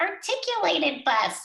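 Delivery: put-on very high little-child voice. Retelling a child naming a bus from the car window, little tiny child's voice. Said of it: "In his little tiny voice".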